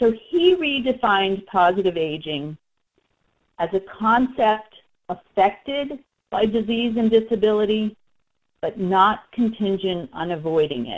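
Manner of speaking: slow, unhurried, measured, word-by-word delivery. Reading out a redefinition of positive aging that was left off the slide: speaking slowly. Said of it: "so I'll say it kind of slowly".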